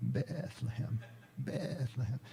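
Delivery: Bethlehem bleated, drawn out like a sheep's baa. Retelling how Francis called Christ the babe from Bethlehem, 'Bethlehem' bleated like a sheep. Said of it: "saying the word Bethlehem in the manner of a bleating sheep".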